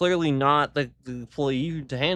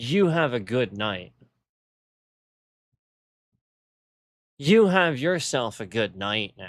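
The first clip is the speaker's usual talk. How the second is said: snide, sarcastic, fake-polite tone; 4 semitones lower than usual. Retelling how the manager said goodbye: imitating a sarcastic manager. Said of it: "Very sarcastically, the manager tells me".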